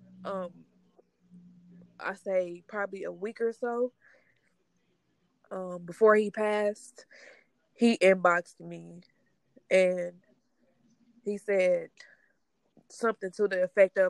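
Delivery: fighting back tears while speaking. Recalling a message he sent about a week before he passed, trying not to cry. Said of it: "I'm trying not to cry".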